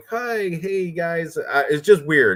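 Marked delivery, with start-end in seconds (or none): 0.1-1.4 high, nerdy little voice. Retelling how a fighter came up the stairs: imitating Ponzinibbio as nerdy. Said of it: "all looking nerdy and shit".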